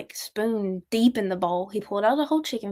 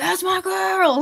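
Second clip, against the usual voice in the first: put-on, loud, high-pitched cheering holler; 10 semitones higher, 4 dB louder than usual. Retelling how dad shouts from the audience: imitating dad screaming. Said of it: "so loud".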